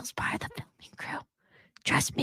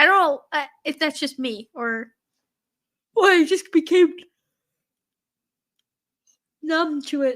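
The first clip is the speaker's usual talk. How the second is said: talking through a yawn; 2 semitones higher, 8 dB louder than usual. Tired, discussing a scary show with another speaker, yawning while talking. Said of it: "Sorry, I'm yawning".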